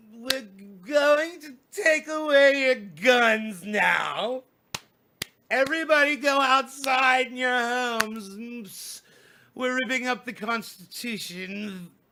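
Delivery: put-on voice, now drawn out. Performing a requested bit as if president: Nancy Pelosi accent. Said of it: "Do the Nancy Pelosi accent".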